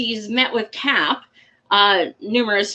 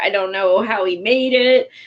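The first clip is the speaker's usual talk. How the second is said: normal talking voice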